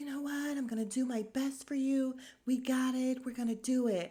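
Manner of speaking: put-on soft whisper. Retelling what a woman said while introduced: imitating a soft whisper. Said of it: "she talks like this, but she's kinda whispering".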